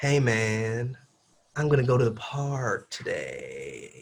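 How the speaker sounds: slow, smooth legato, man stretched out. Showing how a sentence sounds in music terms: smooth, flowing legato delivery. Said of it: "it's like legato".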